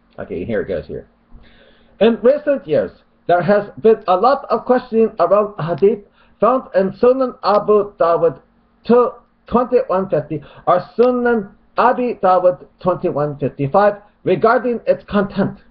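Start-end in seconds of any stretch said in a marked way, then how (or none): 2.0-15.5 put-on Arabic accent, very high-pitched. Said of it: "plus I'll do a mock Arabic accent".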